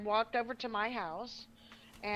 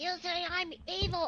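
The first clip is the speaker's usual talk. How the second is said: high, drawn-out, play-acted accusing scream; 9 semitones higher than usual. Retelling how she started screaming in an argument: imitating someone screaming. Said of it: "She started screaming".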